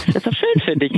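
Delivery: plain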